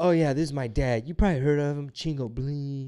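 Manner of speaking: put-on child's voice. Retelling a five-year-old's pretend channel intro: imitating Penny's YouTuber intro. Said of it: "And then she'd be like".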